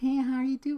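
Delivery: weird, put-on, high, affected flirty voice. Retelling how he talks when he hits on women, imitating his weird homosexual voice tone. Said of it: "weird kind of homosexual voice tone".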